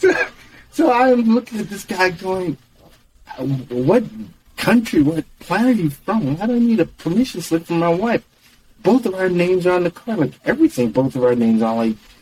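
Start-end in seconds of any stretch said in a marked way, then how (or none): 3.4-10.9 acted-out fuming, incredulous, angry, steaming rant. Retelling arguing with a rental clerk over a permission slip: imitating own angry words. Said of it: "And I'm steaming".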